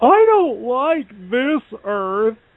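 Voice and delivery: put-on very high, whiny, sing-song boy voice. Mocking how the comic wrote Superman as a boy, whiny Superman voice. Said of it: "written him in the comic to be just this whining boy".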